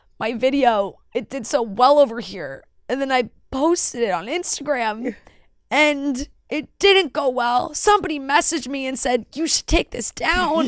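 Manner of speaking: put-on crying, sobbing it out. Retelling a TikTok girl's video, imitating her fake crying. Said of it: "but like fake crying".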